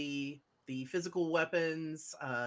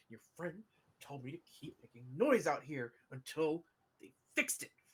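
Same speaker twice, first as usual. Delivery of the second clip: lowered, low, quieter voice; 5 dB quieter than usual. Retelling what someone told them to say, in a lowered voice. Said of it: "the voice lowers".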